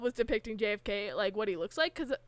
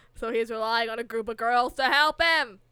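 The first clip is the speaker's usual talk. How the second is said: put-on Boston accent, louder; 6 dB louder than usual. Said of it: "are you consciously doing the J F K voice?".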